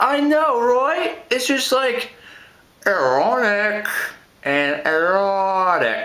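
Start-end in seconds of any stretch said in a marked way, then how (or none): 2.9-6.1 put-on flat American accent on erotic, dropped low. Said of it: "when you say it like a, an American".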